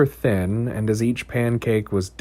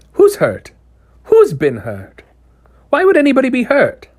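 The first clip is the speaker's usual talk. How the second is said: very high, cracked, swooping pitch; 13 semitones higher, 8 dB louder than usual. Narrator reads a character breaking in after a promise of safety: high, cracked Old Mrs. Hempstock voice. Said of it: "said a high, cracked voice".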